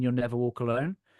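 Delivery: normal talking voice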